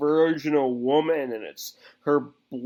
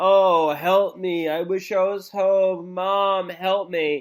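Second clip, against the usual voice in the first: put-on play-acted girl's voice, screaming; 4 semitones higher than usual. Describing a scene, the speaker acts out a girl tied upside down, imitating a screaming plea. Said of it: "she's screaming for her mother".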